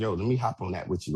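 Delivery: plain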